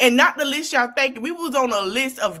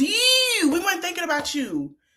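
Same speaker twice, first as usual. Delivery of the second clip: put-on Baltimore accent, broad and local; 6 semitones higher than usual. Repeating your own point to the listener the way Baltimore would say it, in Baltimore voice. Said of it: "in Baltimore voice".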